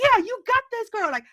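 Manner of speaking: shrill, very loud, high-pitched, peppy yell. Speaker describes working out and yelling at herself: retelling her workout yell. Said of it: "literally yelling at myself".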